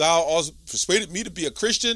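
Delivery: ordinary talk, nothing marked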